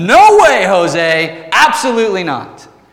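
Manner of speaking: emphatic, flat-out, loud, drawn-out yell. Explaining a Bible verse, acting out Paul's answer: imitating Paul yelling. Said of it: "He's, like, yelling here".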